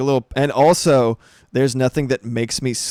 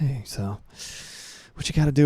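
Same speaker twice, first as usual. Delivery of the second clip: breathy, soft, whispered ASMR murmur; 6 dB quieter than usual. Retelling a pep talk they gave, ASMR voice. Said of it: "I was in my A S M R".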